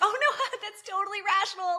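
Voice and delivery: mock laughing along. Retelling Harper's reply while being scolded: imitating Harper laughing along. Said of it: "smiling and taking it and laughing".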